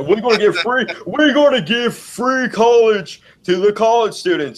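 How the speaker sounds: very high, big, earnest delivery. Imitating a candidate promising free college in a debate: Bernie Sanders impression. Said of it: "It's a pretty good Bernie impersonation".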